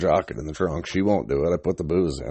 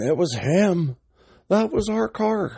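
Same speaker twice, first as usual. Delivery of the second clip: put-on very high, stretched-out, rising shriek; 13 semitones higher than usual. Retelling a guy accusing the speaker, imitating a guy screaming. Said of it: "some guy starts screaming".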